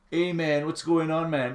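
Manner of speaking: taunting, mocking, fake American accent. Retelling street calls heard walking down Charlotte Street in Trinidad, in a mocking put-on American accent. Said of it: "trying to put on an American accent to mock".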